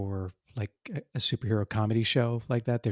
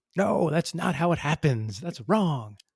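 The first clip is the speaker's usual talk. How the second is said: high, mock screaming; 7 semitones higher than usual. Retelling how they reacted while watching a legal show: imitating screaming at it. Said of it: "just screaming at it like".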